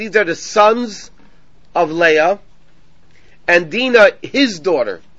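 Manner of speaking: ordinary talk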